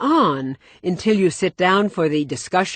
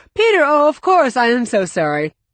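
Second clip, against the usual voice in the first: high, hollow, false-sounding, unconvincing tone; 5 semitones higher, 4 dB louder than usual. Speaker acting out someone who forgot a caller, performing an unconvincing apology. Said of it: "saying unconvincingly".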